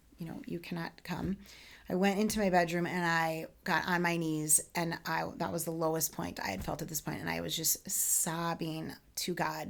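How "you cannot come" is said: put-on whisper, quieter. Retelling going into his office to tell him: retelling a whisper.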